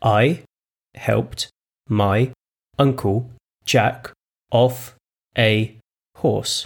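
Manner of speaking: drawn right out, very slow, word by word. Asked by Tiffany to say it slower, [name] repeats the sentence, very slow. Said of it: "Could you say it slower?".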